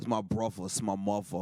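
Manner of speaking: put-on New York accent. Retelling making fun of a New Yorker: mock New York accent. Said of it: "making fun of a New Yorker for his accent".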